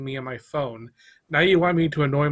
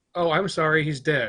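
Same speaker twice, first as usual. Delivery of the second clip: usual speaking voice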